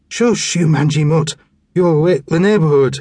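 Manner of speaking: put-on slurred speech. Stumbling up a dark alley, a man yells at a growling dog, slurred speech. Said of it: "he slurred".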